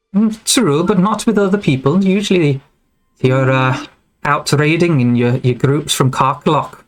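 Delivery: female character voice. Voicing a druid who calls out from behind a chair: female voice. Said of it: "a female voice pop-, pipes up".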